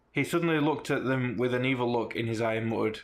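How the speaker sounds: ordinary delivery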